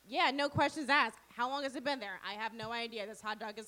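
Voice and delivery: ordinary talk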